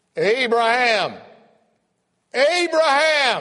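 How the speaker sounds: boisterous, very loud, very high, swooping booming call. Speaker retells his father hearing a voice call out one early morning, boisterous voice. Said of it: "I heard this boisterous voice".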